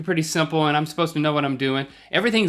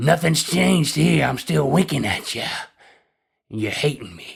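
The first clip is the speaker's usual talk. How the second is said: sinister, menacing machine voice, rough and creaky. Playing a modem talking to its owner, in a scary modem voice. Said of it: "You're scaring me a little".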